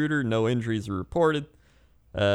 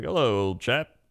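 fancy put-on alligator voice. Imagining the alligator speaking to the homeowner: fancier alligator voice. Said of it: "He could be fancier than that".

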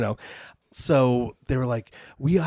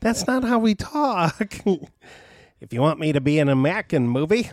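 bad, high-pitched fake Australian accent; 5 semitones higher than usual. Speaker jokes about a movie contract, bad Australian accent. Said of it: "that was bad".

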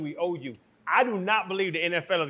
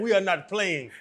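attempted put-on Greek accent. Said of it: "I don't have a good Greek voice".

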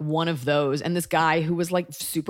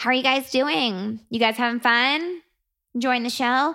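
put-on girly voice; 7 semitones higher than usual. Comedian recalling how an early stand-up show used to open, girl voice. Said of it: "the first iteration of my girl voice".

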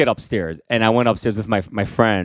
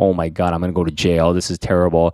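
mock panicked crying, much lower pitch; 4 semitones lower than usual. Recalling being threatened with the police in tenth grade, retelling own crying in panic. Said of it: "And I'm like crying".

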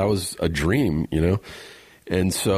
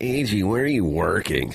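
mock sour, embittered woman's voice. Quoting a woman asking the speaker where they were working, imitating a bitter woman's voice. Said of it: "She just sounded like this really bitter woman".

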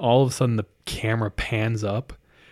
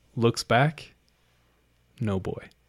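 ordinary talk, nothing marked

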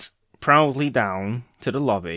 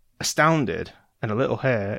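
ordinary delivery

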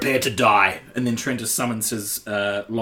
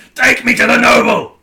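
shrill, very high, spit-flying scream at full volume; 13 semitones higher, 12 dB louder than usual. Threatening a captured man to his face: in-character screaming. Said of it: "grab up and scream, like, spitting".

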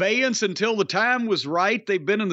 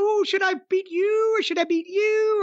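put-on Valley Girl voice, pitched higher; 12 semitones higher than usual. Describing a wrestler from NXT, doing a Tiffany Stratton Valley Girl impression. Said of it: "She's got a Valley Girl accent. She's like".

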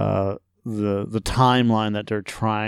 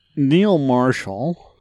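patronizing, condescending tone; 4 semitones higher, 4 dB louder than usual. Discussing a movie, the speaker says a name in a condescending way. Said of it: "said his name in this like kind of a, a condescending way".

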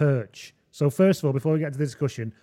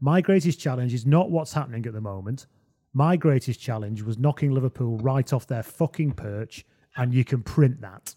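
usual speaking voice

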